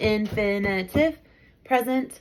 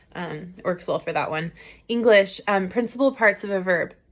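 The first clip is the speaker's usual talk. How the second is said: normal talking voice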